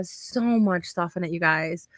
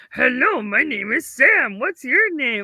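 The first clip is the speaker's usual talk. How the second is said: small, high, slow little voice; 6 semitones higher, 4 dB louder than usual. Showing how a lesson character greets students: Sam character voice. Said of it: "My students love your little voice there".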